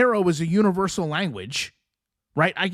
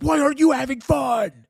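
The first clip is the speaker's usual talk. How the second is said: mock shouting, all worked up; 7 semitones higher than usual. Retelling how she addresses the chat: imitating someone yelling. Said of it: "she's literally yelling at them, like".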